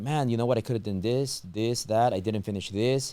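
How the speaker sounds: ordinary talk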